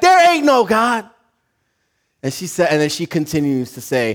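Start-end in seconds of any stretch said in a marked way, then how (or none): 0.0-1.1 put-on shouting, pitched high. Telling a story, acting out what the fed-up man shouts back, retelling a shout. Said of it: "And he shouts back".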